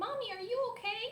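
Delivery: put-on very high, small, tiny child voice. Retelling a phone call, voicing her daughter's words: tiny little child's voice. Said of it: "this tiny little voice".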